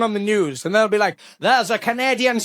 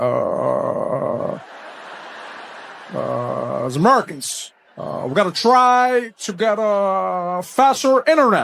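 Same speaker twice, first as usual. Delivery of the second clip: halting, very slow, low delivery, stalling on every "uh"; 4 semitones lower than usual. Imitating how Barack Obama speaks, voice like buffering: halting Obama-style pauses and uhs. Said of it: "sounded like his voice was buffering".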